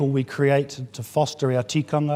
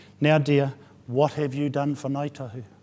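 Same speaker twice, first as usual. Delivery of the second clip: rather loud, raised voice. A speaker retells an elder questioning a young woman in the audience, rather loud voice. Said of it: "in a rather loud voice".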